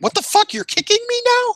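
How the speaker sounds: very high, stunned, disbelieving shocked outburst. Retelling how an opponent reacted to being kicked: imitating someone shocked. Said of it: "in this kind of, like, a shocked way".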